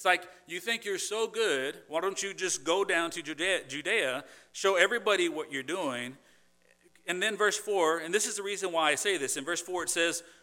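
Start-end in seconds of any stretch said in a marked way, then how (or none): 0.5-6.2 put-on sarcastic tone, slower. Explaining a Bible passage, retelling what others said to him, mock-sarcastic retelling. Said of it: "let me read it back to you sarcastically".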